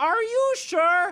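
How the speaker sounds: shrill, loud, very high-pitched doubting tone. Retelling a drive-thru order mix-up: imitating the drive-thru guy. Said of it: "he said it exactly like that".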